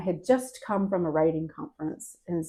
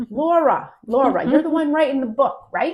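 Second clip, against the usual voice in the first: put-on raised, pitched-up New York accent; 8 semitones higher, 8 dB louder than usual. Retelling what a medium said to her at a group session; New York accent. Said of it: "in his New York accent".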